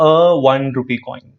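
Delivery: slow, careful, a before one stressed. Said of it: "So I'm saying".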